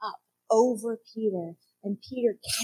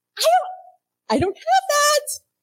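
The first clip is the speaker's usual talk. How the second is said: put-on giddy voice, very high, very slow, drawn out; 8 dB louder than usual. Acting out Peter telling a begging man he has no money: giddy Peter voice. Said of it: "can you hear the giddiness in his voice".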